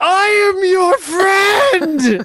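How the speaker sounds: shrill, very high yell at top of lungs. Describing grabbing a creature's head and yelling into its eyes, yelling as loud as possible. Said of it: "Like as loud as I can".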